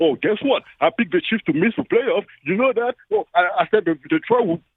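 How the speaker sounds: smug, boastful, gloating told-you-so brag. Speaker mocks Rob Parker bragging to every guest, mock-boastful Rob Parker. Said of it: "You tell everybody that can listen that you were right".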